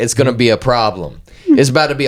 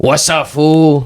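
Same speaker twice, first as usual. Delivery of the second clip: put-on Hollywood-style Mexican-American accent; 4 semitones higher than usual. Doing a best impression of the listener's hometown accent, movie Mexican-American accent impression. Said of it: "so that's my best impression of where you're from".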